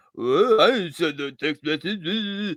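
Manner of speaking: put-on groggy, slow, dazed, half-drunk voice. Retelling a man on speakerphone in a store: imitating a half-drunk man. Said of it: "half drunk or, like, half dazed".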